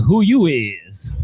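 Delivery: snippy, sassy, attitude-filled tone. Retelling what a customer at the pharmacy said: imitating a customer with an attitude. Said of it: "With an attitude, she's like".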